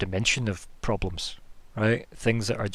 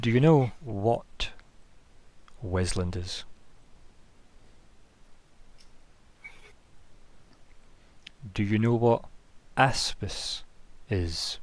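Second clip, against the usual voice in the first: put-on, slow manner soaked in open distaste. A woman turns back to the party and questions them, with distaste in her tone. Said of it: "You can hear like distaste in her tone now".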